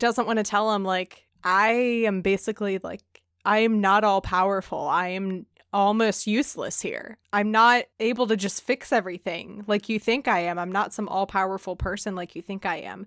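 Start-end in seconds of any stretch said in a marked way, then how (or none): none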